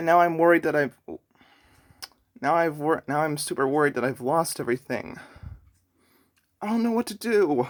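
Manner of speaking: teary voice, catching and choking up. Creator fearing years of Minecraft builds are lost, tearing up a little. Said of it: "I'm kind of tearing up a little bit".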